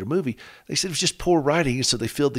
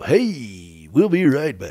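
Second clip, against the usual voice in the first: put-on announcer voice, very slow and drawn-out; 5 dB louder than usual. Showing how people talk on the radio, put-on radio voice. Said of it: "they feel like they have to have a radio voice".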